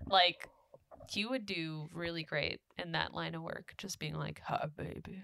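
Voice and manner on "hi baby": bad put-on celebrity voice, breathy whisper. Joking about a sex hotline job: bad Morgan Freeman voice. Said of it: "I can't do the Morgan Freeman voice".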